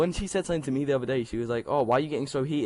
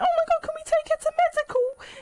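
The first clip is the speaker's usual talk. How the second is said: put-on very high-pitched, girly schoolgirl voice; 4 dB louder than usual. Retelling girls asking to take a friend to medical: imitating girls' voices. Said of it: "that was a great voice impression".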